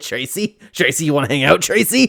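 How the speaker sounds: creepy, over-familiar admirer voice. Imitating people who pester female celebrities: imitating a creepy fan. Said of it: "the people like".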